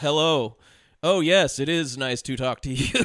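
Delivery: wooden, read-out delivery. Mocking an actor's stiff phone-scene line reading, like an athlete reading cue cards: imitating Paul Walker's wooden acting. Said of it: "when you would see athletes on Saturday Night Live".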